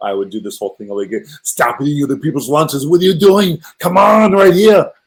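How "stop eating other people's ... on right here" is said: loud, pitched-up goofy stage character voice. Showing the Arnold impersonation done in a doo-wop show: Arnold Schwarzenegger impression. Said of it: "I did an Arnold impersonation in the show".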